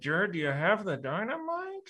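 soft, muttered from the corner of the mouth. Recounting their own earlier line to jared, spoken out of the side of the mouth. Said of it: "out of the side of my mouth going like".

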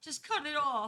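very high, loud, desperate, panicked shout. Retelling being stuck with a trapped arm, yelling to the person helping: retelling a yell. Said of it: "I yell".

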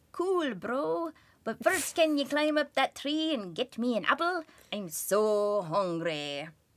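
fake Irish accent kept up throughout. Retelling a story, voicing Jack's reply; Jack in a put-on Irish accent. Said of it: "offending with my accent".

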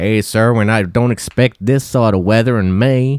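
put-on Floridian accent. Quoting what people there said to the speaker, imitating a Floridian accent. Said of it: "Is that a Floridian accent?".

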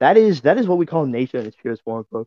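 ordinary delivery

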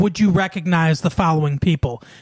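ordinary talk

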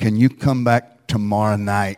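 whispered delivery. Retelling the pastor pulling the mic down mid-sermon: imitating a whisper. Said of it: "whispers in my ear".

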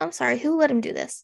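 ordinary talk

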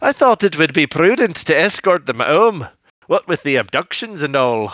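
put-on convincing Scottish accent. Quoting the Scottish nanny character from the episode: good Scottish accent. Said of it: "That was actually a very good Scottish accent".

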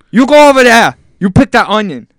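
shrill, very high, very loud put-on Japanese accent. Acting out a scene the co-host asked to picture, put-on japanese accent. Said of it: "Is it really a Japanese accent?".

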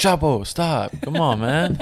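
put-on yelling. Retelling yelling at a dog to stop all night: retelling yelling at a dog. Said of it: "That's all we were yelling all night".

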